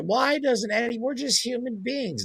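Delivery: very high, tearful, crying whine. Imitating a woman on the national news, imitating someone whining and crying. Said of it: "whining and crying".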